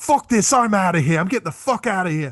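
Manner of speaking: put-on fed-up Australian accent. Retelling seeing a famous actor leave, doing Mel Gibson's Australian accent. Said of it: "he still has the Australian accent at the time".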